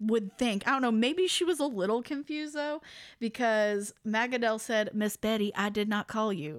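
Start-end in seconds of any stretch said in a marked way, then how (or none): 4.9-6.6 put-on sassy voice. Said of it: "I'm putting a lot of sass on this".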